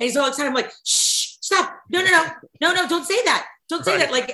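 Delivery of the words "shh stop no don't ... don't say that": scared, urgent, pleading, high, frightened shushing. Retelling hushing her excited husband during a game, retelling shushing her husband. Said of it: "I was literally like terrified to believe".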